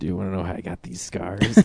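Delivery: menacing movie villain impression, low and quiet.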